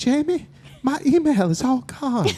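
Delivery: very high-pitched motherly voice, dragging words slowly. Retelling a phone call from a mom about lost email: Mama C voice. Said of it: "she's like".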